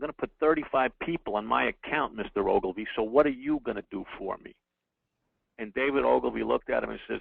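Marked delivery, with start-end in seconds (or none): 0.0-4.5 cocky, smug, self-satisfied boastful tone. Retelling what a company's advertising guy said to mister ogilvy: imitating someone speaking smugly. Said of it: "He kinda said it smugly".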